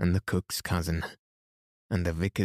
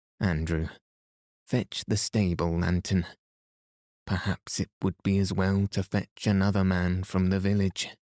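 usual speaking voice

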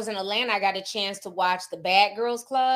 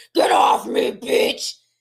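extra-deep, loud, raspy demonic voice; 13 semitones lower, 6 dB louder than usual. Recalling how a woman sounded possessed, the speaker quotes her in Joseline's extra-deep demonic voice. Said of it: "Her voice was all extra deep and demonic".

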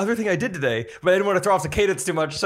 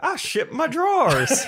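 put-on high-pitched elderly man's voice; 8 semitones higher than usual. Quoting a commercial to a co-host, doing an old man voice. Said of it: "old man like".

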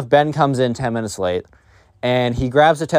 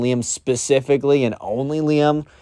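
ordinary talk

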